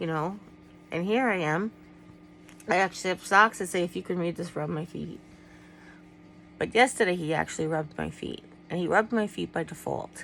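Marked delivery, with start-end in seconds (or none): none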